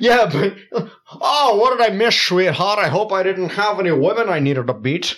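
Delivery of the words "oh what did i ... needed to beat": flirty, put-on leading-man film-star voice. Voicing a dragonfly character who flirts: Sean Connery voice. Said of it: "he talks like Sean Connery".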